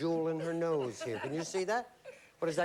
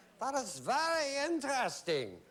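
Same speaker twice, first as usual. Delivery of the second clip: fake German accent, pitched up; 8 semitones higher than usual. A game host responds to a contestant's car answer in a put-on German accent. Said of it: "[GERMAN ACCENT]".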